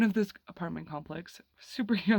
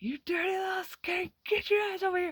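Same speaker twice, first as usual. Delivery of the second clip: put-on, very high, high-pitched screaming rant; 11 semitones higher than usual. Retelling how grandma reacted on finding the kids: imitating grandma screaming. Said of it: "screaming at me".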